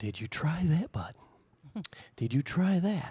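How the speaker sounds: calm, soothing announcer tone. Retelling how Danny answers while you go crazy over radio problems, in a soothing radio Bob Ross voice. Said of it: "His soothing radio Bob Ross voice".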